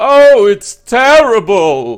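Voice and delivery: huge booming cry, very loud and high-pitched. Game master voices someone inside the chapel, heard by the players, in a booming voice. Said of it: "from a booming voice from inside the chapel".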